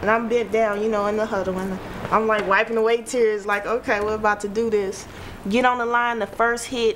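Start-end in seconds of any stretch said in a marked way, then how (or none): none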